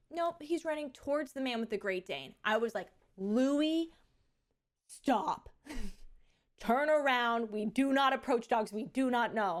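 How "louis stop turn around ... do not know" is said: slow, firm, stern voice. Parent recalling calling her child back from a stranger's dog, retelling her mom voice. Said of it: "sorry for using my mom voice".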